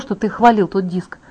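ordinary delivery

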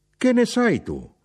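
shrill, very high shout, pitched way up. A mother, offended by her child's question about the father, shouting back. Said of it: "gridò".

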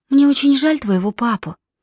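gentle, mild delivery. Crouching by the bed, she speaks to the boy, soft. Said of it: "мягко сказала она".

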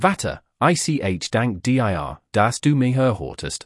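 plain

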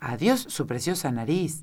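plain

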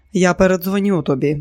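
ordinary delivery, nothing marked

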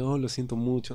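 normal talking voice

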